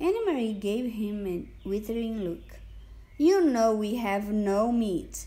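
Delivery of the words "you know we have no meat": impudent, cheeky, insolent, raised voice. She answers a soldier inspecting her basket, insolent. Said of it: "she said insolently".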